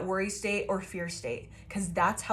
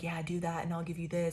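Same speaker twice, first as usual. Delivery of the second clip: mock whispering, quieter; 2 semitones lower, 6 dB quieter than usual. Describing entities that tempt people: imitating entities whispering. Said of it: "these entities are whispering".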